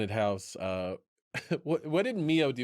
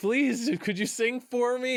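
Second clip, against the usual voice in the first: put-on very high, pleading, begging voice; 13 semitones higher, 4 dB louder than usual. Retelling an anime scene where a character begs another: imitating someone begging. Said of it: "begging Reeds".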